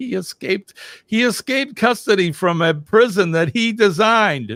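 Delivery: talking through laughter, very high-pitched. Reading a story aloud to a listener, laughing while talking. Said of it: "I'm laughing at this".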